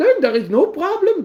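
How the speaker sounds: put-on German accent, very high and loud. Speaker repeats a line, doing an attempted German accent. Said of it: "I did my best German accent".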